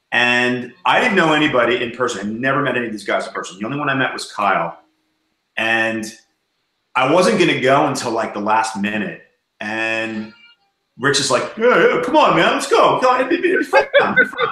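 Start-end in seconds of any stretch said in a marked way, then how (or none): 11.5-14.4 very high, animated, swooping sing-song. Retelling how Rich urged him to come to G Fest: imitating Rich. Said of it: "It's a funny impression".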